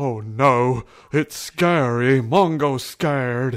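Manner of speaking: loud, scared creature voice crying out. Narrator voices the mysterious voice the players hear, Mongo's voice. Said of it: "you hear this voice, and it sounds like this".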